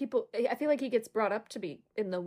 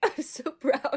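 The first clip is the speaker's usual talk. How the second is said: put-on blubbering, fake bawling through the words; 4 semitones higher than usual. Retelling a graduation skit where someone fake cries: imitating fake bawling. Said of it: "fake, like, bawling".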